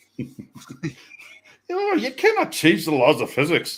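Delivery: put-on sing-song Scottish accent slipping into Irish. Naming the engineer who inspired a career, Scotty impression drifting Irish. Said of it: "When did you change from a Scottish to an Irish accent?".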